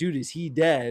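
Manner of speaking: ordinary delivery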